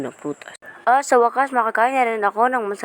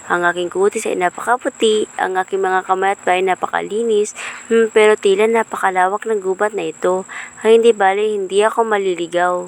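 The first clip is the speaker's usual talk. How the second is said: put-on haughty, vain, self-admiring young maiden voice; 3 semitones higher, 4 dB louder than usual. A vain maiden alone in a vast forest admires herself: vain self-admiring maiden. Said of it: "Ang dalagang Mataas ang tingin sa sarili".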